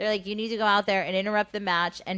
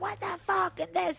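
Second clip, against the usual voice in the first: mock, very high-pitched yelled outburst; 10 semitones higher, 4 dB quieter than usual. Retelling how everyone backstage reacted to her: imitating people yelling. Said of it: "everyone's yelling".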